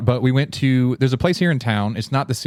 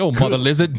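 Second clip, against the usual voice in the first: British-accented delivery; 2 semitones higher than usual. Reading out dinosaur name translations, the speaker says one in a British accent. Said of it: "I always have to say that in a British accent".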